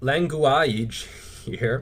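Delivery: slow delivery, laughing through the word. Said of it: "so I'm sorry for laughing".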